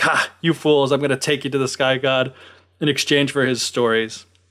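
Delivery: ordinary delivery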